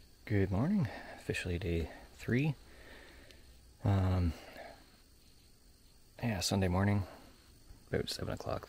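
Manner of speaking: soft, hushed whisper. Starting a day-three update at seven on Sunday morning, whispering. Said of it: "That's why I'm whispering".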